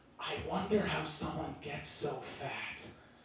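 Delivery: very quiet, low, hushed half-whisper. Speaker quoting a girl in a grocery line to her boyfriend, retelling a half-whisper. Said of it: "she whispers".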